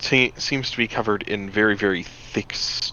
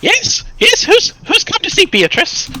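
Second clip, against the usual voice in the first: put-on elderly woman voice, very high, swooping and sing-song; 4 dB louder than usual. Voicing someone answering a knock at a hut door: older woman voice. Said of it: "you hear the voice of an older woman".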